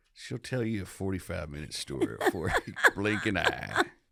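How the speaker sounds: put-on cowboy voice with Western movie accent. An actor soon to appear in a Western tries out a Western voice. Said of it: "that was my Western voice".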